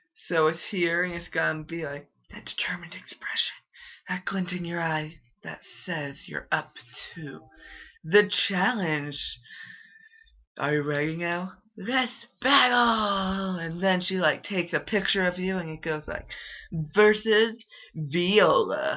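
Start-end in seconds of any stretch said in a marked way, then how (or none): 1.1-13.6 overdone, deliberately bad fake acting voice. Voicing a game character's lines for a friend while admitting the acting is poor; hammy bad voice acting. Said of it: "I'm going to give her awful voice acting".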